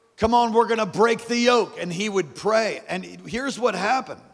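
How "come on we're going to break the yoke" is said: fiery, fervent, raised and pitched-up voice. Recalling Dr. Morocco at morning prayer meetings reading Isaiah: imitating his great fervor. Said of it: "he would say with great fervor".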